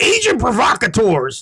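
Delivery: loud, very high-pitched call, pitched way up. Showing a somewhat good Alex Jones impression. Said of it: "That's my Alex Jones".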